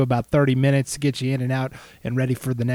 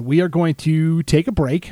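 ordinary talk

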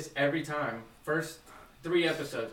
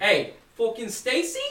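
loud, high, put-on New Jersey accent; 8 semitones higher, 7 dB louder than usual. Imitating her friend's father who went to school in new jersey: put-on new jersey accent. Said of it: "I feel like that was more Boston than Jersey".

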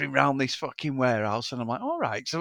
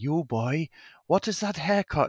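bad put-on Welsh teacher accent, slow; 4 dB quieter than usual. Retelling being suspended from school, speaker quotes his welsh teacher in a terrible welsh accent. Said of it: "I'm going to do the accent now".

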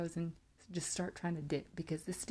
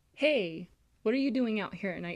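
loud hollered yell, called out as if across a distance; 3 semitones higher, 7 dB louder than usual. Retelling calling out at night to someone who looked like a cousin: retelling a yell. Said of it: "So I yelled".

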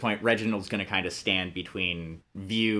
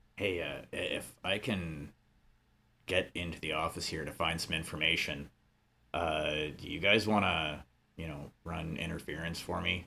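voice lowered a little, soft; 3 semitones lower, 7 dB quieter than usual. A player character asks companions to run interference for an office search; lowered voice. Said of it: "kind of lower his voice a bit".

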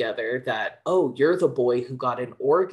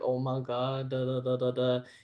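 mock weepy, tearful babble through tears; 6 dB quieter than usual. Retelling an anime scene where a character cries: imitating someone crying. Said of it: "And he's, like, crying".

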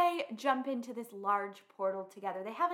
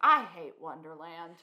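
put-on deadpan delivery, louder; 5 semitones lower, 5 dB louder than usual. Recapping a show, retelling a character's reaction line; imitating Jefferson deadpanning. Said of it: "just kind of deadpans".

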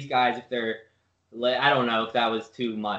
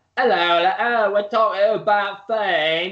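posh, grand put-on accent, slow and raised; 7 semitones higher, 6 dB louder than usual. Mocking podcast hosts who never mention peas, speaker imitates them: big fancy accent. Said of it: "these big, fancy accents".

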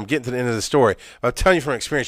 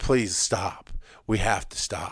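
soft, quiet, hushed pleading tone; 5 semitones lower, 7 dB quieter than usual. Retelling a fight, repeating own past words: imitating quiet begging. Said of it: "quiet, begging her to stop right now".

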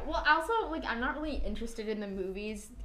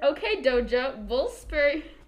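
slow, loud, put-on reading voice. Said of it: "Oh, stop doing that".

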